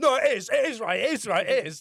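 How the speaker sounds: acted insistent shouting. Speaker retells a boy shouting insistently at a girl, retelling an angry shout. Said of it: "started shouting at Maddie".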